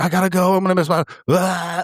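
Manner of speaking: high, angry shout between heavy huffs. Retelling how an impatient plane passenger acted: imitating someone yelling and huffing. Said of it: "he's just yelling and huffing".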